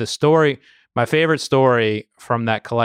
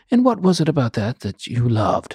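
put-on British-accented voice. Retelling a guy's follow-up question, in a British accent. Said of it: "in his british accent".

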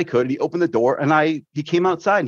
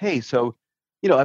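mock-calm tone, very calm, slower. Retelling what he said when he called the next day, imitating a very calm tone. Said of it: "he very calmly goes".

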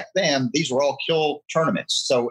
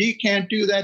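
mock, high-pitched screamed voice; 8 semitones higher than usual. Retelling a meeting, the speaker quotes the others' reaction, imitating people screaming. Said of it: "and they screamed".

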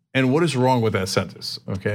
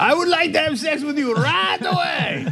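put-on Turkish accent, pitched very high. Speaker imagines how their cousin would come across; turkish accent. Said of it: "with his Turkish accent and be like".

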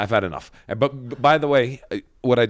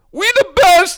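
very loud, shrill, high hype-man yell; 11 dB louder than usual. Imitating a hype man yelling his call on the microphone: imitating a hype man's yell. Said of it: "He was just on the microphone yelling".

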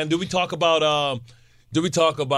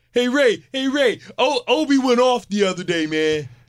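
teasing, slow, pitched-up mocking voice; 7 semitones higher than usual. Teasing the other speaker by imitating how he talks: imitating the other speaker's way of talking. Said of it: "I go out of my way to not sound like that".

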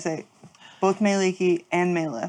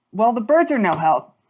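grave, completely earnest, dead serious, raised voice; 4 semitones higher, 5 dB louder than usual. Speaking in character after sitting down heavily: said very seriously. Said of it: "she says it so seriously".

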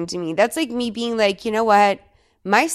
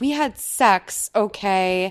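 ordinary talk

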